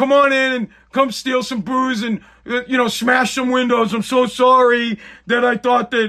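sarcastic, mock apologetic voice. Mocking the co-owner's apology letter: mock apologetic voice. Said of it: "that stupid letter where he's like".

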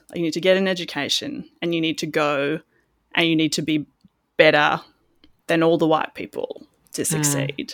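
plain

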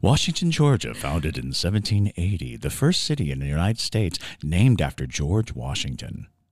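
deep, very low audiobook narrator delivery. Introducing a town's history to the others, audiobook narrator voice. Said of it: "You sound like the beginning of an audiobook".

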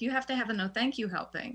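ordinary talk

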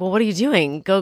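ordinary talk

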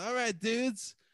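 put-on acted drunken speech. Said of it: "And I was fucked up".

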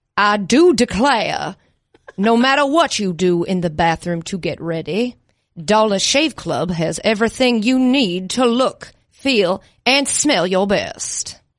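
put-on southern gentleman voice. Doing the Dollar Shave Club ad read in a Foghorn Leghorn-style Southern gentleman voice. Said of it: "tried like a Southern gentleman".

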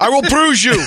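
put-on Russian accent, very high-pitched. Speaker mocking a misquoted movie line, in a Russian accent. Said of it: "Stop with the Russian accent in Scarface".

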